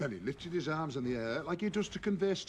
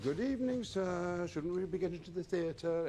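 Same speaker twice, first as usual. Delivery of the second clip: put-on proper nanny voice; 3 semitones higher than usual. Taking his hand, the narrator addresses him in her best nanny voice. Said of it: "in my best nanny voice".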